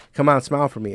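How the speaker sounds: ordinary talk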